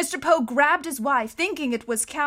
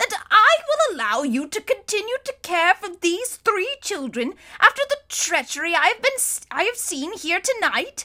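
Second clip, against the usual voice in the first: exasperated, fed up, higher pitch; 6 semitones higher than usual. Mr. Poe confronts Count Olaf about the three children, in an exasperated voice. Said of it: "in an exasperated voice".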